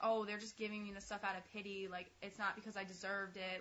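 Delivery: ordinary delivery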